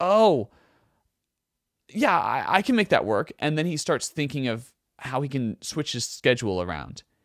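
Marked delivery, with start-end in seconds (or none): 0.0-3.3 put-on tentative, stumbling, hesitant, high, raised voice. Retelling the producer's reply to coming to the ranch: imitating Rick Rubin hesitantly. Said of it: "Rick Rubin's kinda hesitant".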